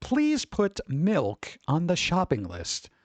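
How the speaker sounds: slow, careful, over-articulated enunciation of every word. Retelling a request spoken to a voice assistant: enunciating carefully. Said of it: "I enunciate".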